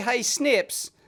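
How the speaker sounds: normal talking voice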